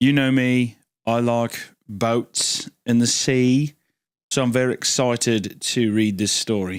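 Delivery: put-on British accent. Opening a story reading about boats, in a put-on British accent. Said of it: "he has not quit the accent since".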